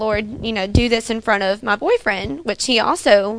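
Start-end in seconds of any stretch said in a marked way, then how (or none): none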